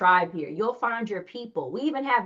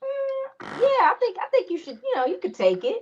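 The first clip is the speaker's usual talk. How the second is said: put-on very high, breezy, casual, nonchalant voice; 13 semitones higher than usual. Retelling what Sky Zone said about a trade: imitating a nonchalant tone. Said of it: "He said it so nonchalantly".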